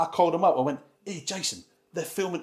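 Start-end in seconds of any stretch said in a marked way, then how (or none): 1.0-2.4 put-on speaking in a Cockney accent. Retelling a phone call to Jason Statham: imitating Jason Statham's accent. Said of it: "that's his accent".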